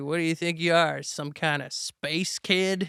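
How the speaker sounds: put-on backwoods country accent. Speaker retelling a voice heard in a half-asleep dream, in a redneck backwoods voice. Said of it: "redneck backwoods voice that was just like".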